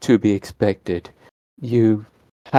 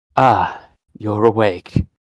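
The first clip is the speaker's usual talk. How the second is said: deep, metallic, machine-like voice. Game master voicing Triage speaking into a waking character's mind: deep metallic voice. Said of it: "a deep, metallic voice saying".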